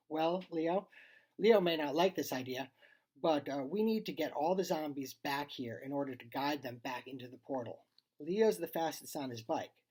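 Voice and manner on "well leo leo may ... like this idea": plain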